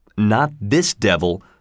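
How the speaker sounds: ordinary delivery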